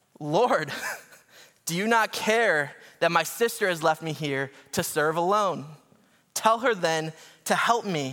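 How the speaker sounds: mock sudden erupting, bursting-out aggrieved delivery. Retelling Martha complaining to the Lord about her sister: imitating Martha erupting. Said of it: "And I imagine her erupting".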